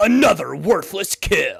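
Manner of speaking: booming, very loud, rough video game announcer voice. Joking about a character's pointless kills, in a Halo announcer voice. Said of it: "You're almost doing Fisk voice now".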